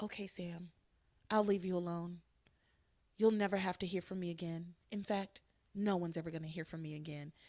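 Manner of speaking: soft, quiet, settled and resolute voice. Retelling what a woman said to sam after a heated back and forth, quiet voice. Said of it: "she goes into kind of a quiet voice and she says".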